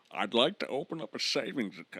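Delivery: put-on Scottish-accented voice. Attempting a Bane voice asking to open a savings account: Sean Connery voice. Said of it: "that's just Sean Connery".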